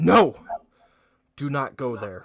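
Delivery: loud, high-pitched yell.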